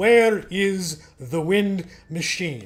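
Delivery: play-acted big booming teacher's voice, drawn out. Speaker retells what their future teacher said, in Rafi Armenian's big booming voice. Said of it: "in his big booming voice".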